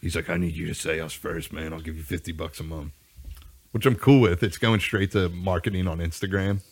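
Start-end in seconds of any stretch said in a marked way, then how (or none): 0.3-2.9 put-on voice with heavy rasp on every word. Retelling what a podcast guest said about sponsorships: imitating a raspy voice. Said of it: "he talks real raspy".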